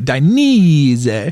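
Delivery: Italian roll, slowed ending. Coaching someone on saying Dainese, the speaker demonstrates an Italian roll, slowed ending. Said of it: "You gotta slow it down at the end too".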